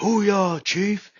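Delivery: very high-pitched, roaring, barked military shout. Retelling how a recruit answered the chief: imitating a roaring shout. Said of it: "just roaring sound".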